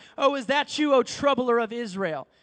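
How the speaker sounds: play-acted, dripping, scornful, heavy sarcasm. Retelling what is said when the prophet of the Lord arrives, mock-sarcastic. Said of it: "real sarcastic".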